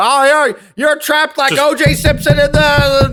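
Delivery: very high, loud, drawn-out, slow promo voice. Imagining the referee cutting promos like Roddy Piper: Roddy Piper impression. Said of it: "you're like Roddy Piper".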